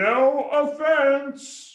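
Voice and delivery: very high, full-throated shout from a distance. Saying the line again after being asked to yell it: yelling. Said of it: "Same way".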